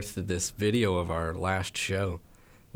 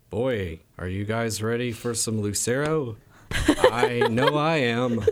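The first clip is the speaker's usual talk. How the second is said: put-on dry, dead serious, unhurried delivery; 3 semitones higher, 4 dB louder than usual. Recalling their opening set before lucero, the speaker retells their own deadpan line. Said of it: "I just said deadpan".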